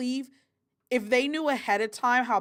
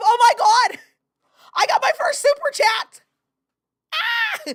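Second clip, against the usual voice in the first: very high, shrill, very loud excited scream; 9 dB louder than usual. Speaker reacting to getting their first super chat, excited screaming. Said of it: "I shouldn't be screaming".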